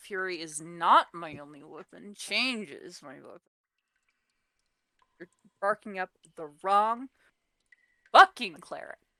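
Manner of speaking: muttered, not announced. Player voicing her character's line, not saying it out loud: muttering. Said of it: "muttering it".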